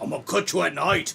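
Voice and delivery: clumsy, bad, fake British accent. Mocking another speaker's parting words as Jack the Ripper: bad British accent. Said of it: "Never ever try and do a British accent again".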